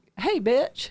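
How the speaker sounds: comic mocking jab. Retelling a reply to a pastor who doubted the booking: imitating own mocking tone. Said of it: "I kinda did it in a mocking way".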